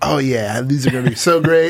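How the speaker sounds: smug, full-of-himself anime hero boasting. Acting out a character in an anime moment: acting full of himself. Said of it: "so full of himself".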